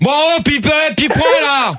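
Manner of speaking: angry yelling.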